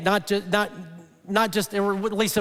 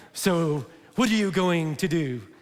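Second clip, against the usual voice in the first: clumsy, badly done put-on French accent; 3 semitones lower than usual. Acting out throwing down the gauntlet with a glove slap, terrible french accent. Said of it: "It's a terrible French accent".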